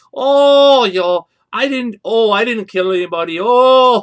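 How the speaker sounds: put-on out-of-control Wisconsin accent, shrill and very loud. Make fun of how people talked in a documentary, in an out-of-control Wisconsin accent. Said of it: "the Wisconsin accents were out of control".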